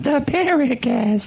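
high-pitched mock alien voice. Asked to speak like an E.T. once more, he says the show name: high-pitched E.T. alien voice. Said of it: "Can you speak like an E.T.?".

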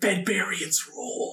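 barely-there, faint, soft whisper. Shadowy elven figures approach at night; a faint whisper on the wind. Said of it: "you just hear a faint whisper on the wind".

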